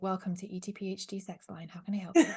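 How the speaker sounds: put-on radio presenter announcer voice. Going a bit deeper for a greeting, in a deeper Radio 4 voice. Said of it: "you have to go a bit deeper, like Radio four voice".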